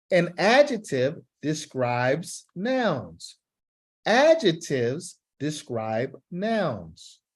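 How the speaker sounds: slow, deliberate, careful delivery. A teacher models the sentence for a student who must slow down, in slow, careful speech. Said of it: "I want you to slow down".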